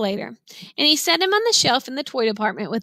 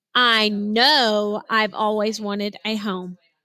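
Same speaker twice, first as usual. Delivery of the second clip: know hit hard, rest plain. Reading a story aloud, word in italics: emphasis on know. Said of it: "That tells me to put emphasis on the word no".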